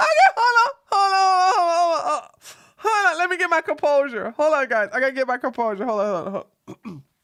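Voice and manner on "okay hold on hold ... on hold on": words breaking up with laughs, pitched up. Speaking to viewers while trying to regain composure, laughing while talking. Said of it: "I can't even say it without laughing".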